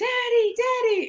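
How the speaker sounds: yelling, high pitched.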